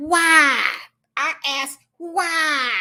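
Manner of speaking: very slow, drawn-out, blustery Southern drawl. Reacting to a man's rules on relationships, asking why in a Foghorn Leghorn voice. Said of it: "In my foghorn leghorns voice".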